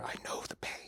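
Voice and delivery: very quiet whisper right into the ear. Recounting what a man whispered in their ear while injecting them, whispering. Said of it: "he's whispering in my ear".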